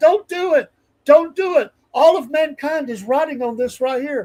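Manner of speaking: loud, very high, shrill screaming. Retelling a buddy at a ballgame calling out: imitating a friend screaming. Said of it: "He's screaming this out".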